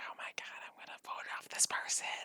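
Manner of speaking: hushed, secretive whisper, barely audible. Retelling how reality show contestants talk secretly: imitating a whisper. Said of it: "whispering to each other".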